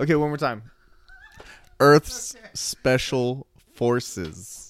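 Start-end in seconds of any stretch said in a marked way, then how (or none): 1.8-4.7 very slow, carefully drawn-out, deliberate phrasing. Repeating a hard-to-say name one more time, said very slowly. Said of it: "I have to say it so slow".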